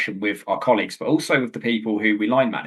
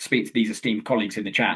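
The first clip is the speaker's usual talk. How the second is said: plain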